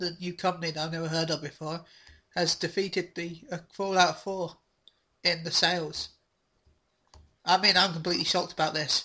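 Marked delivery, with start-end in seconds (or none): none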